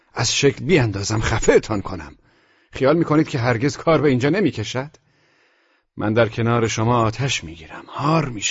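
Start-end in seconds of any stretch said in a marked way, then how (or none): none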